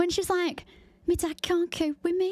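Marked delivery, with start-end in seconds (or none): 1.1-2.3 put-on little, pitched-up Liverpool Scouse accent. Retelling a girl's words, the speaker quotes her in a Scouse accent. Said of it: "she's got such a Scouse little accent".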